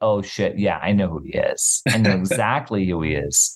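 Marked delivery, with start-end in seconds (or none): none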